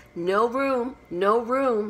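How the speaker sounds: very slow, stretched, high, loud drawn-out cry. Three crowded at one corner of a table see someone coming, cried out. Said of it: "they cried out".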